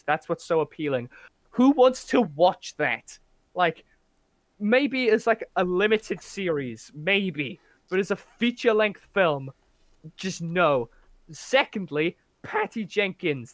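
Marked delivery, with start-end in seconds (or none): 12.4-13.5 sudden voice crack mid-word. Making a second point about a film, voice cracking. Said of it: "That was a voice break".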